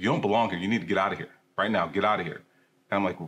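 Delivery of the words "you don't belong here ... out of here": imitated angry man's voice. Retelling a maintenance man ordering the speaker out of the field house, imitating an angry man. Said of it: "this anger in his voice".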